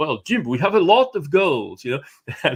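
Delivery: very reserved, restrained, understated British voice. Quoting one person's answer to a consultant, in a very reserved british manner. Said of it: "very reserved British".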